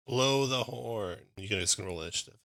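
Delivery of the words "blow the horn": urgent, called-out, commanding tone. Voicing a soldier who yells an order to the other soldiers: yelling an order. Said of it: "he yells out in common to the soldiers".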